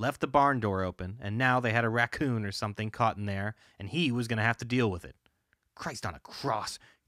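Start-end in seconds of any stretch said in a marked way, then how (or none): 5.7-6.8 low, quiet growl under the breath. Pulling the barn door open to deal with a trapped animal, growled. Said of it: "he growled".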